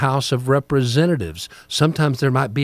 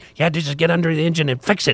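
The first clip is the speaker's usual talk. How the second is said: put-on small, little voice; 4 semitones higher than usual. Describing a billionaire candidate who spoke to the common man: imitating his little voice. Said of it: "he had this little voice like this".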